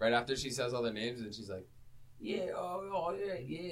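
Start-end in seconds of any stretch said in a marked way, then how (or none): 2.2-3.7 put-on drawled, slow, high-pitched Australian accent. Retelling a movie character's reply: imitating her Australian accent. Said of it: "goes right back to her Australian accent".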